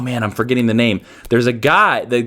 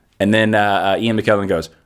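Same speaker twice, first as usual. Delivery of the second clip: ordinary delivery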